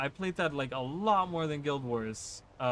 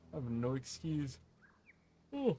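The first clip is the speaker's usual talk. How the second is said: speaking through a yawn; 6 dB quieter than usual. Speaker chatting with the guys, apologizing, yawning. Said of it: "I don't know why I'm yawning".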